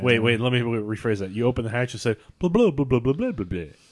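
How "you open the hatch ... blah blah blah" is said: put-on British accent, faster. Player rephrasing an instruction, in a british accent. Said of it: "That was a British accent".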